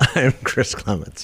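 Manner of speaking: words broken up by laughter while speaking. Podcast co-host giving own name at the episode's start: laughing while speaking. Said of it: "I'm sorry, I'm laughing".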